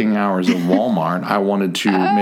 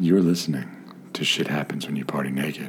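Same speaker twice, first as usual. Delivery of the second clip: soft, alluring, sultry voice; 5 semitones lower, 8 dB quieter than usual. Demonstrating how to say the show's intro line, sultry voice. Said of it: "All just sultry, not low, but like sultry".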